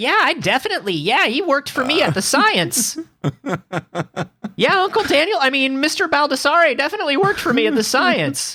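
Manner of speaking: really high, thin-toned, very high-pitched voice. Retelling a phone call with his old manager, who answered: really high voice. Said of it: "a dude who picked up in an arcade with a really high voice".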